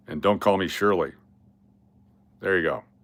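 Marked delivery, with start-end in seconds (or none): 0.2-1.1 put-on deadpan movie-actor voice. Performing a requested impression: Leslie Nielsen impression. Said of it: "for a Leslie Nielsen impression".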